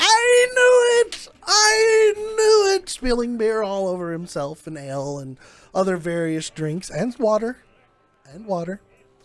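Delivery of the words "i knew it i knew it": shrill, very high, very slow top-of-lungs scream. Voicing a character running across a bar toward the group: screaming at the top of his lungs. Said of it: "screaming at the top of his lungs".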